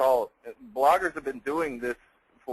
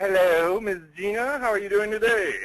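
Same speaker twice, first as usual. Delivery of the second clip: put-on fancy voice, pitched up; 8 semitones higher, 4 dB louder than usual. Guest greeting the host at the start of a training session, in a fancy voice. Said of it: "That was my fancy voice".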